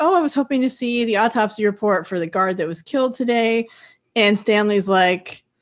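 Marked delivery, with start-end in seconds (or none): none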